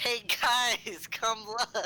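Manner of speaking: high, loud yell in a put-on character voice. Voicing a character who calls the others over: in-character yell. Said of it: "I just yell".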